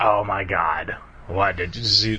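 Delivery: put-on slow, drawn-out older lady voice. In a comedy bit, Mother Nature on the couch speaks to someone home late, in an older lady voice. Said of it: "This is my older lady voice".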